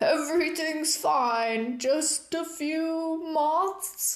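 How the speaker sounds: very slow, drawn-out, gruff ogre bellow. Killian yells down the stairs, faking an ogre; gruff ogre imitation, yelled. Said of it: "In a gruff imitation of an ogre's voice, Killian yelled down the stairs".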